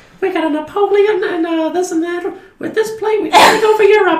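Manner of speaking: put-on very high, tiny little baby voice. Imagining the show ending with a baby speaking, in a tiny little voice. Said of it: "with his tiny little voice".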